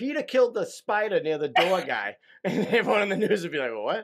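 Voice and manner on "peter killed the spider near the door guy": genuine, native Boston accent. Speaker shows how a news line would sound, in a real Boston accent. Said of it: "If you use your real accent".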